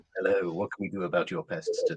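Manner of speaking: husky, low-pitched voice. Answering the business phone line, done in a husky voice. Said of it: "I will answer with a husky voice".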